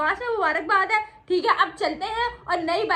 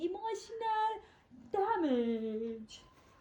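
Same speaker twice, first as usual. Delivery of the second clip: very slow, stretched, drawn-out delivery. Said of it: "emotional damage हो गया".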